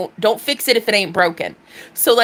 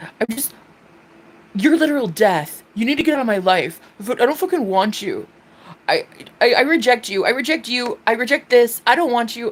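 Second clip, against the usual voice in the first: tearful crying voice, pitched higher; 2 semitones higher than usual. Speaker acts out a voice memo sent to a man while in pain: retelling crying rejection. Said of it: "you making me cry".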